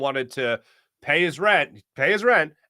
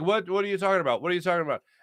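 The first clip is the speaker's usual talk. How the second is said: halting, non-native broken English with repeated words; 3 semitones higher, 4 dB quieter than usual. Retelling the landlord's confused reply: imitating broken english. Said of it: "he spoke through broken English".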